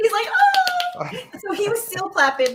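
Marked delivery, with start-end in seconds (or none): 0.3-1.1 very high, giddy schoolgirl voice with a sigh. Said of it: "He's like a teeny schoolgirl".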